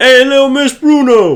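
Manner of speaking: very high voice of a stout little man. Arriving at a phone booth, the listener hears a man greet them, stout little man voice. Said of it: "you hear this stout little man go like".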